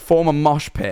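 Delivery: ordinary delivery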